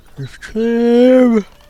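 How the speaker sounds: yawning through the words. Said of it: "Sorry, I'm yawning again".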